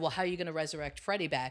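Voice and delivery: ordinary talk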